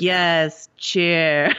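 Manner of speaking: put-on sarcastic voice. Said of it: "the sarcasm that Arya as Walder Frey was using".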